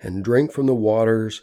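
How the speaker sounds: ordinary delivery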